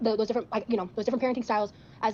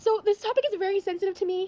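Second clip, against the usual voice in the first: very high voice, crying through the words; 10 semitones higher, 3 dB louder than usual. Dating contestant talking about herself, crying while talking. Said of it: "I'm sorry for crying".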